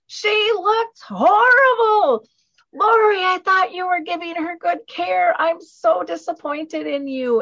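shrill, very high, loud, carrying scream. Retelling how the mom's friend screamed in a restaurant: imitating Kay screaming. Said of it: "screams out in the restaurant".

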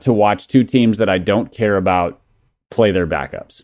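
ordinary delivery

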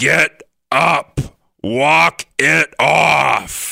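put-on raspy smoker voice. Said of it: "my coach, who smoked during practice, his, his voice".

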